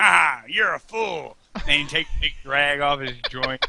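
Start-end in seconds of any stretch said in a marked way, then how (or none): 0.0-1.4 slow cartoon villain voice, each word spaced out. Retelling a cartoon scene with a joint, imitating Cobra Commander. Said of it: "And he's like".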